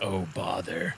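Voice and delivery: quiet whispering and muttering. Voicing a character who sees the scene, whispering to himself. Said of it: "Kyborg whispers to himself".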